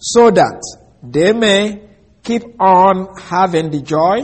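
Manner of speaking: slow, drawn-out reading. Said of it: "I repeat that".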